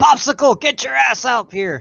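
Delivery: high, barking drill sergeant yell. Showing how they'd call a co-speaker by last name, yelling as a drill sergeant. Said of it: "yelling as a drill sergeant".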